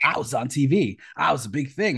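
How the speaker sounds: slow, annoying, mocking tone. Retelling what Bruce tells his friends: imitating Bruce's mocking tone. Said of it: "his mocking tone".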